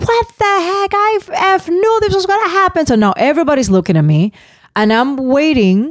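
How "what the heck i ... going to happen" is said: shrill screaming, way up high. Recalling screaming at the rink when the lady kept going: retelling own scream. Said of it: "I'm screaming".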